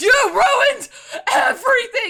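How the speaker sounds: shrill, high yell at full volume. Asking what the actor sounds like, trying an Adam Driver voice. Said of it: "What is Adam Driver sound like besides".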